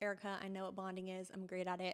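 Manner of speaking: ordinary talk, nothing marked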